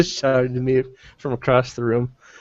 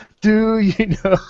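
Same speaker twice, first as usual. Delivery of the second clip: deliberate, slow, drawn-out, loud, with raised pitch; 9 semitones higher than usual. Playing in character, repeating a question after being told to: slower and louder. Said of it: "Say it slower and louder".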